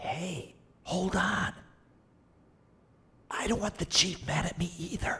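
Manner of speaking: very quiet, hushed whisper. One of two characters speaks privately to the other about the chief, whispering. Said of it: "What are you two whispering about?".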